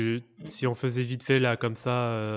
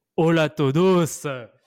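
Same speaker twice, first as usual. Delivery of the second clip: very loud, high, fake Argentine Spanish accent; 5 semitones higher, 9 dB louder than usual. Opening the show by greeting everyone, in a put-on argentine spanish accent. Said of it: "on va prendre un peu l'accent espagnol aujourd'hui".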